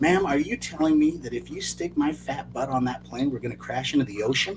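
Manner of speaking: hushed, small, quiet little voice. Speaker retells what he said to a woman, in a small, quiet voice. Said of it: "in a small, quiet voice".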